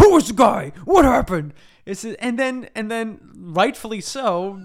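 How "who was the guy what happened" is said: mock furious yelling, higher and louder. Retelling a scene where a flying hero interrogates a guy, acting out an angry yell. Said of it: "he's yelling at him too".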